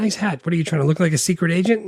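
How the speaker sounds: teasing, mocking tone. Retelling a movie character's jab at another man: imitating mocking tone. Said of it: "just straight up making fun of him".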